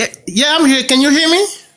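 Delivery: high-pitched screaming straight into the microphone. Joining a call and asking if the others can hear: screaming. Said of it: "Stop screaming".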